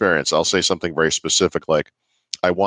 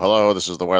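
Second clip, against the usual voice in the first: robotic voice, faster. Describing a voice that wasn't like this, demonstrating a robotic voice. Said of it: "It wasn't robotic voice".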